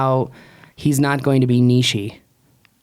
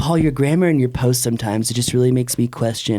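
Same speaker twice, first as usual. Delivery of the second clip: plain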